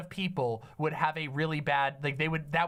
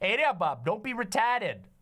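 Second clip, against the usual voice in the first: put-on Maine accent with raised pitch; 5 semitones higher than usual. Showing how a line would sound from someone from Maine, in a Maine accent. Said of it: "That's what it would sound like if you were, instead of being from Boston, you were from Maine".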